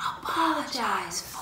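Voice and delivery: high, slow whisper. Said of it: "Why did you whisper that?".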